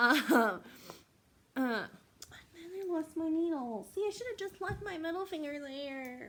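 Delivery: whiny, complaining voice. Talking to viewers while crafting, after losing a needle, whiny voice. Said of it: "That's my whiny voice".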